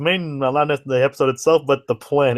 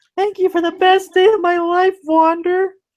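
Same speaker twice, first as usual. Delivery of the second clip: squeaky falsetto, very high-pitched; 3 dB louder than usual. Saying he'd need a falsetto to voice the line, he speaks in high falsetto voice. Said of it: "I'd have to speak in a falsetto, like".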